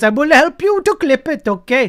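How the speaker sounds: put-on Indian accent. After describing a network issue, the speaker offers help in an indian accent. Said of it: "Try an Indian accent".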